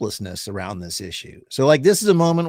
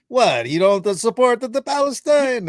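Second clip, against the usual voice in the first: terrible put-on Italian accent, pitched up; 9 semitones higher than usual. Retelling what an old Italian lady said, in a bad Italian accent. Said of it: "Italian, not my terrible accent".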